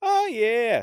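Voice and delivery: very high Australian accent with a falling tune. Describing how Australians sound: Australian accent, falling intonation. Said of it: "the Australian is is all like the come down".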